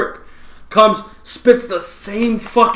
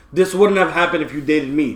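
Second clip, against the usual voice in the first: normal talking voice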